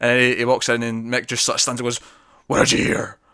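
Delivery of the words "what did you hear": really gruff, low, whispered, threatening voice. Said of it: "really gruff".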